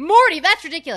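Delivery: full-volume, shrill, very loud yell. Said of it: "you're yelling at me for saying Morty".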